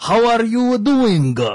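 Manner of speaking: put-on Japanese accent. Describing a hired Japanese guy's English, the speaker imitates him in a thick Japanese accent. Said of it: "he literally speaks like that".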